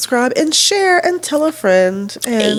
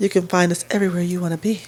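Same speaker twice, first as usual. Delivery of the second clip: sexy, seductive voice, lower and quieter; 6 semitones lower, 5 dB quieter than usual. A host telling listeners where to find them online, in a sexy voice. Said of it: "Sexy voice".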